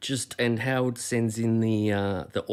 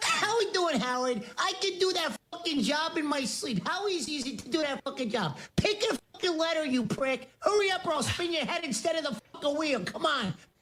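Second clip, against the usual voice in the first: very high-pitched tough-guy badgering rant; 3 dB quieter than usual. Doing a Joe Pesci impression while greeted as Joe: Joe Pesci impression. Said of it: "Joe Pesci impersonator".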